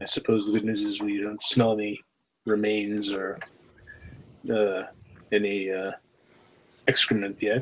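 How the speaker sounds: hushed, quiet half-whisper. Half-whispering in character to a companion in a tunnel: half-whispering in character. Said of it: "I'm kinda whispering to".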